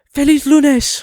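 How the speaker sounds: very high-pitched, dubbed-anime-style Spanish delivery. Trying the Spanish greeting on request: Shinji voice in Spanish. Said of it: "say Feliz Lunes in your best Spanish with a Shinji a- voice".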